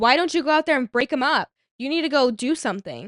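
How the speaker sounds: mock irritated, angry, scolding tone. Retelling a friend's demand made over the phone: imitating Nat being mad. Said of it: "she's, like, mad at me".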